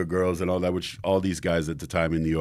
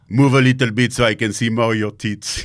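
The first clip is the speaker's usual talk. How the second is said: put-on, caricatured French accent; 5 semitones higher, 9 dB louder than usual. Retelling what a photographer friend said during shoots: imitating a French photographer. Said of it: "That's such a good French accent".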